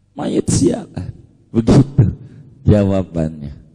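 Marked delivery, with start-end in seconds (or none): 0.2-1.1 put-on Jakarta Betawi accent. Retelling a kiai's joking answer about the dead: Kiai Muhajirin's Betawi Bekasi accent. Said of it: "dengan logat Betawi Bekasinya".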